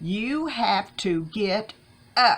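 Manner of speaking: play-acted no-nonsense voice. Retelling what a visiting nurse said to an unresponsive man, imitating a very stern tone. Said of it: "she said in a very stern tone".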